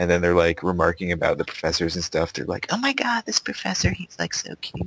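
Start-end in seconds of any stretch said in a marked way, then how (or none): 2.7-4.9 very high, excitable, hyperactive whispered chatter. Complaining about girls behind them in lecture, imitating their hyperactive whisper. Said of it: "that hyperactive thing just in like a whispering tone".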